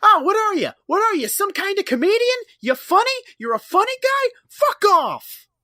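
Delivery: very high, loud tough-guy needling, no menace. Acting out Barney as a reverse Joe Pesci: Barney Fife impression. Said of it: "He's just like".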